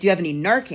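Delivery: normal talking voice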